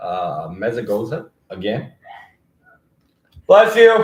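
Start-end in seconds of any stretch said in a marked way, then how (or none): 3.5-4.0 sudden blurted shout, very loud and high. Reacting on camera to a fiancée's sneeze, yelling. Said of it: "I didn't mean to yell on camera".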